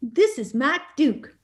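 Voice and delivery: put-on Arkansas southern accent. Retelling a phone call from Walmart's CEO, Mike Duke impression. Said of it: "Mike Duke has a, the best accent".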